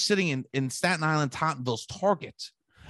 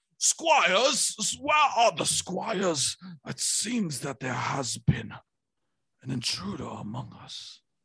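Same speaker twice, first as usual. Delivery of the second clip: put-on regal medieval king voice. Acting out what he said in the moment, in a king voice. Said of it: "That was a king voice".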